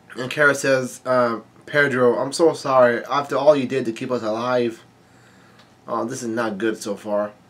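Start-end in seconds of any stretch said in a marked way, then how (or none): none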